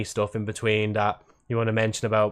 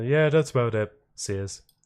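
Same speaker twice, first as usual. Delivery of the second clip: nonchalant, offhand, totally unbothered tone. Imagining a streamer ending a video: Moist Critical voice. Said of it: "imagine Moist Critical's voice there".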